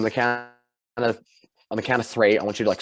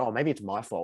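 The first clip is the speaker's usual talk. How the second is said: soft, snide, acted sarcastic tone; 7 dB quieter than usual. Retelling what a man said after getting the speaker's order wrong, imitating a sarcastic remark. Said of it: "trying to be sarcastic and be like".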